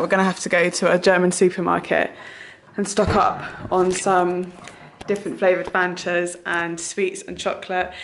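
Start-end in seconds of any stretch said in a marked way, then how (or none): none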